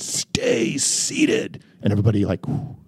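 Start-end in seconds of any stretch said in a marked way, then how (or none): 0.0-1.6 put-on whispered, firm, breathy big-boy authority voice. Retelling ordering panicked jumpers to sit: commanding big boy voice. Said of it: "my biggest big boy voice".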